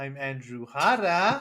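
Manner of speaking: put-on Mexican accent. Opening the Bomb Squad show and introducing himself, in a Mexican accent. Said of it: "I said it with a Mexican voice".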